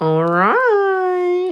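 very high sing-song "all right", swooping, stretched long. Getting ready to put on rings, say it the way he goes, imitating Mason. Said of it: "Like Mason in a long time".

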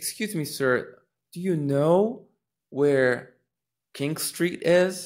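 rising lilt climbing on final is. Example of asking someone for directions, rising pitch at end on is. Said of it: "So do you see that inflection? So you're asking a question".

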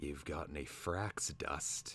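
secretive, hushed, conspiratorial whisper. Reading a story, the slaughterer adds a remark to Twig; conspiratorial whisper. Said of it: "added in a conspiratorial whisper".

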